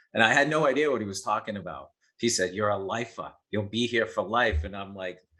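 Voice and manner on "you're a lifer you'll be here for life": imitated thick Boston accent. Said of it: "this was in Boston with the heavy accent".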